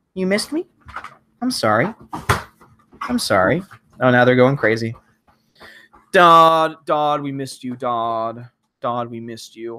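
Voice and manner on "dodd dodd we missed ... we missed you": goofy, silly, drawn-out dog voice. Voicing their dogs greeting someone, dog voice. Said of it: "Those are my dog voices".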